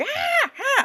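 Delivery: mock very high screamed cries of ah. Retelling how Miss Peacock screams in the film: imitating Miss Peacock screaming. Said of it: "every time she's screaming like".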